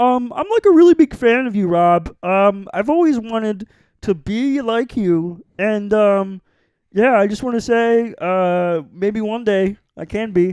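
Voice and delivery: hesitant, halting, high, slow, stumbling over ums. Two speakers trade impressions; one does an impression of the other speaker. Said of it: "Here's my impression of you".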